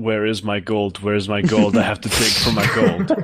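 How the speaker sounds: ordinary talk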